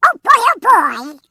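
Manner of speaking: very high, loud, quacky cartoon voice. Asked what character voices you have done in your career, demonstrate your Donald Duck voice. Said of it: "one of the voices of Donald Duck".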